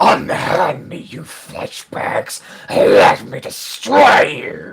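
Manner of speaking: drawn-out, very loud, slow enraged cry. Voicing a captured, restrained prisoner: prisoner yelling in rage. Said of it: "he is yelling out in common".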